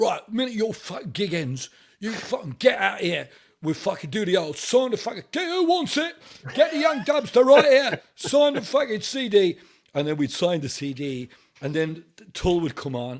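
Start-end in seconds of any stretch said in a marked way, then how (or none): 0.0-9.6 very high, loud London Cockney voice. Retelling what an English-Irish man would say after their gigs, imitating Tommy's Cockney accent. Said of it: "Absolute Cockney Londoner".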